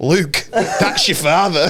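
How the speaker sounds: slow, drawled Yorkshire accent. Joking that the villain is from Yorkshire: Darth Vader in Yorkshire accent. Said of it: "He's just from Yorkshire".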